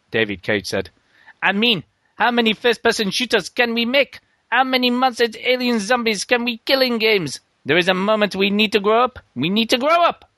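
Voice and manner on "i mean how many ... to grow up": bad, awful French accent, pitched higher. Quoting a game maker's remarks, done as a crap French-accent David Cage impression. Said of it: "I'll try and do this in a really crap French accent".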